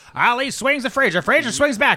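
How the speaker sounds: put-on high, old-time radio boxing announcer call. Speaker recalls hearing fights on the radio in the 60s, doing an old radio boxing announcer voice.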